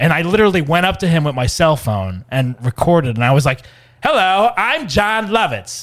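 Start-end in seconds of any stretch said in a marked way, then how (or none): 4.0-5.8 every word stretched out, pitched a touch high. Retelling walking up to him and recording: Jon Lovitz impression. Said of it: "doing my impression of John Lovitz".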